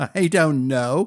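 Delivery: chuckling while speaking. A boy answers a question among laughing boys and his mother: chuckling. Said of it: "chuckled [name]".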